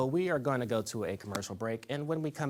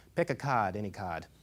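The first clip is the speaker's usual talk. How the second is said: put-on Boston accent, lower pitch; 3 semitones lower than usual. Telling a fisherman-and-magician joke, punchline in a boston accent. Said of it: "Bostonians and their terrible accent".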